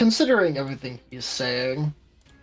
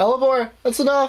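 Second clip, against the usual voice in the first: very high, loud, raised yell; 12 semitones higher, 5 dB louder than usual. Voicing Towson, who yells at Hellborn to stop: Towson yelling. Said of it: "Yelling in Towson's uh, tone of voice".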